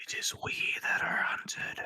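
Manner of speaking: whisper in character voice. Playing a rogue sneaking up behind a character: whispering in character. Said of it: "Are you whispering that in his ear?".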